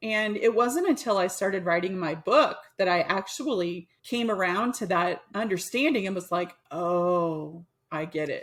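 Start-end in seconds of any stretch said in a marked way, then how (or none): 6.7-8.4 mock dawning realization, very slow, stretched-out oh. Retelling the moment of understanding while writing a book: imitating dawning understanding. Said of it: "the tone of voice is the understanding dawning".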